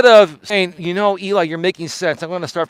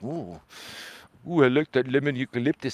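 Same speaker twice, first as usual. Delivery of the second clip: goofy, soft, silly talking-dog voice; 4 semitones lower, 10 dB quieter than usual. Describing the dogs sniffing it, speaker voices them in a put-on dog voice. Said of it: "I have like my dog voice".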